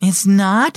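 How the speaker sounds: trembling, uncertain, shaky voice. Narrator reads Riley's question to Grandpa on the boat: shaky voice. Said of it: "Riley asked in a shaky voice".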